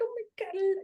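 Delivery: put-on very high-pitched baby-talk voice. Showing the voice used when thinking about a baby: baby voice. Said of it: "cannot hold back the baby voice".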